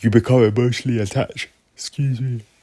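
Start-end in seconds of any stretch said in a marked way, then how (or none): 0.0-1.5 speaking through a yawn. Speaker, absolutely knackered, talking about being a sports fan, yawning. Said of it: "I'm yawning".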